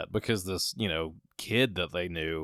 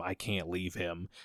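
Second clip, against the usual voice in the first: put-on sobbing voice, quieter; 6 dB quieter than usual. Retelling a film scene where a grieving mother begs at the casket: imitating a crying mother. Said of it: "crying and losing her mind".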